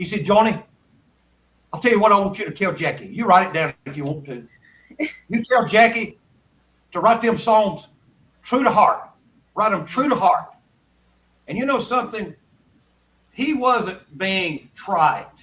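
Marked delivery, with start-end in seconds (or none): 0.2-10.5 dead serious, earnest delivery. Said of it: "he got dead serious".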